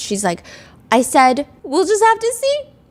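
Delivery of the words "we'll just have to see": mock sobbing in a very high, tearful voice. Retelling a witness's courtroom answer: imitating sobbing high-pitched voice. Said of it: "she starts sobbing, and her voice gets very high-pitched".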